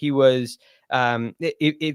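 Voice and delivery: very slow, halting stutter with false starts. Discussing a golfer's recent results, stuttering. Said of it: "I'm stuttering here".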